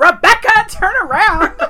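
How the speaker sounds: put-on yelling. Recounting what a guy said after yelling at a girl in the street, retell his yell. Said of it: "He's like yelling at a girl".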